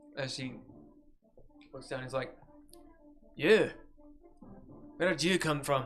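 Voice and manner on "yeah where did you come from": put-on slight Scottish accent. Voicing a dwarf who looks down at a stranger: slight Scottish accent. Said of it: "I'm just gonna go a little Scott".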